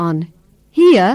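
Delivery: sarcastic tone rising then falling.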